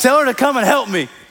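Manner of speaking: play-acted barked-out voice. Retelling Martha's complaint to Jesus: imitating someone barking an order. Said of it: "She starts barking at Jesus".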